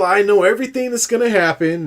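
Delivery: high know-it-all voice. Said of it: "Gruden was like the know-it-all".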